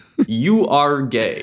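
put-on television broadcaster voice. Doing a quick impression of a talk show host. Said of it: "That's my Larry King impression".

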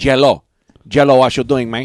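Spanish-influenced accent.

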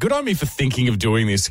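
normal talking voice

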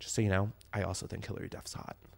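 timid, very hushed whisper, barely audible. Retelling what a friend said on Valentine's Day: imitating a friend speaking quietly. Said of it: "said this so quietly".

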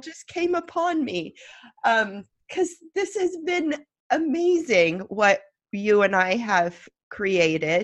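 emotional, teary, choked-up voice near tears. Reflecting on two years of making the show together, getting teary. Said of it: "I'm already getting teary".

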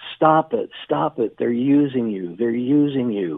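put-on, mildly urgent, repeated pleading cry in woman's voice. Retelling a woman in a car yelling at a runner: imitating a woman screaming. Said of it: "a woman in a car screaming at him".

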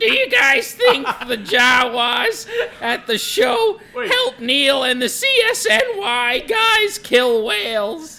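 very high, very loud, shrill put-on bird-like character voice. Taking a turn at imitating another person, in a put-on character voice. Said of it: "I'll do his danger. Titty bird voice".

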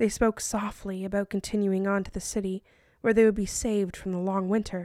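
ordinary delivery

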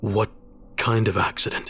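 ordinary delivery

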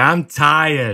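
put-on little toddler voice with Boston accent. Joking that all toddlers have a Boston accent, doing a toddler voice with Boston accent. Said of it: "all toddlers have a Boston accent".

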